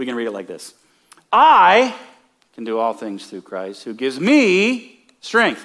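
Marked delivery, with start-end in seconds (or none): 1.3-5.6 heaviest stress on I and me. Reading a verse one of two ways, stress on I and me. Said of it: "The I and the me become the most prominent part of this verse".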